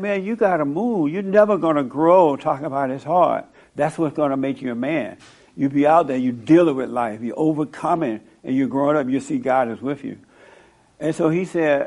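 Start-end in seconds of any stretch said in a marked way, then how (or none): none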